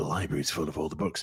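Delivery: very low, held-back, subdued, understated delivery. Imitating Indiana Jones when he's being subdued: subdued Indiana Jones voice. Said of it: "Harrison Ford's Indiana Jones when he's being subdued".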